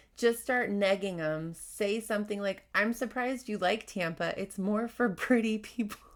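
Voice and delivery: ordinary talk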